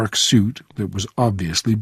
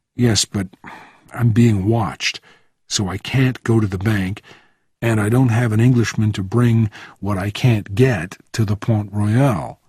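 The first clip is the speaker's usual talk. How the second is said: ordinary delivery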